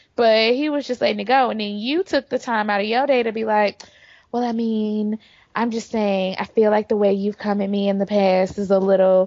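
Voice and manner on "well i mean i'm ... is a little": mock, put-on condescending girl voice, fake-sounding.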